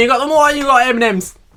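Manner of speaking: put-on Cockney accent. Joking about a podcast with Cockney hosts, in a Cockney accent. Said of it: "M&M's in Cockney accent".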